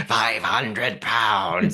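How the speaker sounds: creepy, demonic gremlin doll voice. Describing the dolls, the speaker imitates one doll in a demonic Camilla doll voice. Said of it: "has the most demonic voice out of them".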